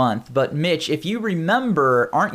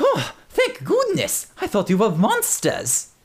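high, swooping fake German accent, full of relief; 6 semitones higher than usual. Narrator voicing a janitor character who has just seen the players, put-on german accent. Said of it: "Like, his name's [name], and he works... He's a janitor here, ... Is this a German guy? I'm going to find the closest thing I can to stab him for that accent".

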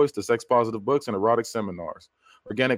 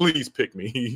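eager, imploring, pleading, begging tone. Retelling how a wrestler in the game reacts when picked: imitating someone begging. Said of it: "he's, like, begging".

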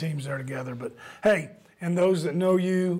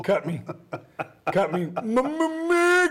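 high-pitched boxer's call, one word drawn out; 7 semitones higher than usual. Riffing on a movie scene, calling out to Mick: Rocky impression. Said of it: "but more like Rocky's Mick".

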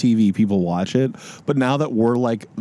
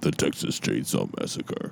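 spooky trailer narrator voice, much lower, quieter; 11 semitones lower, 9 dB quieter than usual. Showing how old horror movie trailers used to sound, in a spooky movie trailer voice. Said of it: "the movie trailer voice would always be like this".

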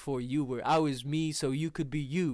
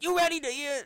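very high, pitched-up voice; 14 semitones higher, 3 dB louder than usual. Retelling a livestream moment, imitating Chris Rock introducing the album. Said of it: "That's a good impression".

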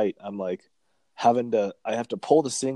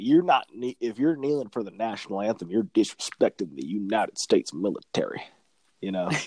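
put-on Louisiana accent. Mimicking one of the guys he is describing, imitating a louisiana accent. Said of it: "that's a good fucking accent right there".

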